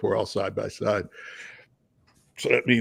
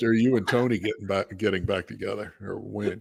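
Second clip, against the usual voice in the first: usual speaking voice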